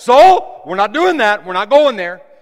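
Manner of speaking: very loud, booming speech. Showing how to talk to your own soul: talking loud. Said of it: "I'm talking loud right now".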